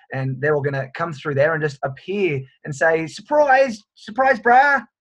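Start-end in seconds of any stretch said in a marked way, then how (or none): 3.0-4.8 put-on terrible, very high-pitched New Zealand accent. Imagining New Zealanders appearing by surprise: terrible Kiwi accent. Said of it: "Terrible it's Kiwi accent!".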